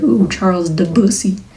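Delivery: ordinary delivery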